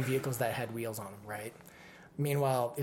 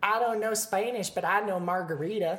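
raised, put-on Texan accent; 7 semitones higher, 5 dB louder than usual. Retelling what a woman said in a Texas restaurant, in a Texas accent. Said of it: "She's like a Texas accent".

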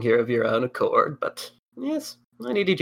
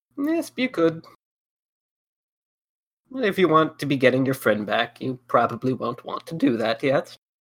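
clumsy, bad attempt at an old woman voice. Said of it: "I don't do a very good old lady voice".

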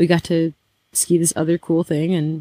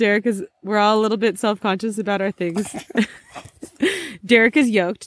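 good-natured, playful teasing tone; 4 semitones higher than usual. Talking with a friend about going to the gym, teasing. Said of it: "sorry, I'm teasing you".

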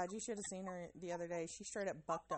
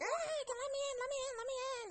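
put-on shrill, very high child's scream; 4 dB louder than usual. Retelling a child screaming at a locked bathroom door: imitating a child screaming. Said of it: "Addie's screaming".

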